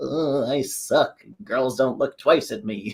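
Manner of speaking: mock depressed nasal voice. Describing a man with no confidence, imitating a depressed, nasal voice. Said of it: "like a depressing, like nasally, uh, like no self-esteem".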